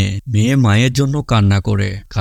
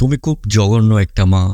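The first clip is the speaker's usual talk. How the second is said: ordinary delivery, nothing marked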